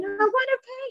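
mock scream, very high-pitched and drawn out. In labor at the hospital with nobody around, retelling screaming. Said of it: "And I'm screaming".

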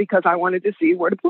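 normal talking voice

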